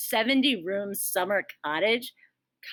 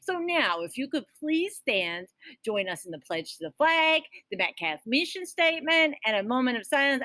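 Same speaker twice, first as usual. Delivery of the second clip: laid-on, put-on New York mobster accent; 4 semitones higher than usual. Asking everyone to stand for the pledge: put-on New York Mafia accent. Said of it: "I have no idea what accent that was".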